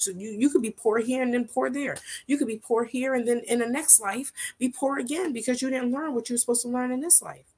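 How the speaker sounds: very fast, very high-pitched, loud, rattled-off rush. Addressing the audience, the speaker rattles through a point very fast. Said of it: "I said that very fast".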